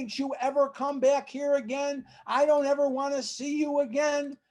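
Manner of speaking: high-pitched yelling. Retelling how a man yelled at the speaker, imitating a man yelling. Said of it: "he's yelling at me".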